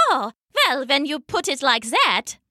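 ordinary talk

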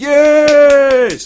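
high, loud cheering.

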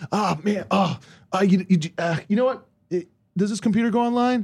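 high, wired, rambling delivery.

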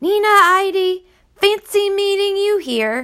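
booming, very high cry, one word drawn out. Narrator reads a voice crying out at Nina: booming Hating Man voice. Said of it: "a booming voice cried out".

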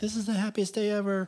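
very high, play-acted, happy tearful gush. Retelling the reaction of the woman the speaker proposed to, imitating happy crying. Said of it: "She's all happy and crying".

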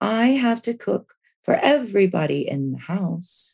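put-on entranced English accent. Retelling what a woman in a trance kept saying, in an English voice. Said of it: "It was like this English voice".

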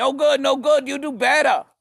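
very high, shrill, loud scolding scream. Retelling a sweatshop evaluation where a woman stood over them: imitating a woman screaming. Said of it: "screaming at me".

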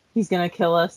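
ordinary delivery

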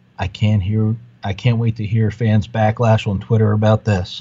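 whispered. Retelling leaning over to the wife in the theater: retelling a whisper. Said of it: "I leaned over to my wife and I whispered".

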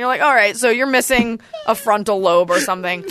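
ordinary delivery

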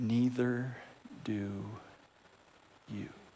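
put-on soft, gentle voice. Recounting the Heavenly Father's reply to someone refusing to forgive, acting out a gentle reply. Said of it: "your loving Heavenly Father gently says".

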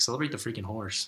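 normal talking voice

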